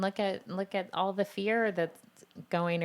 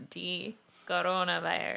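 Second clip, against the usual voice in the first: put-on strong Spanish accent.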